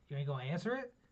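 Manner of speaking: ordinary talk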